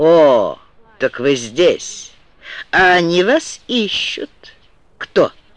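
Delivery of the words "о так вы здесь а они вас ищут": slow, sneering, mocking drawl. A man standing before another man speaks to him, mocking. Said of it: "он насмешливо произнес".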